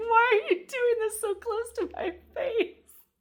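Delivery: very high, shrieking, screaming infant wail. Joking about a card picture, voicing the baby as screaming: imitating a screaming baby. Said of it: "make the baby seem like it's, like, screaming".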